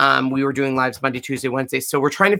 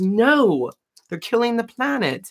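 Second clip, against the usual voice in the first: slight put-on British accent, slow, higher, drawn out; 9 semitones higher than usual. Retelling what a friend said about kitchen towels, imitating a british accent. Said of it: "with her, her little British accent".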